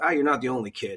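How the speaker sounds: ordinary delivery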